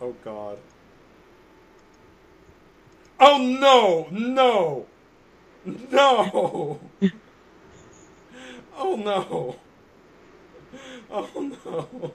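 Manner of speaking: very slow, drawn-out, loud, high crying laughter. Reacting to a link someone just sent, laughing to tears. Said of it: "I'm crying".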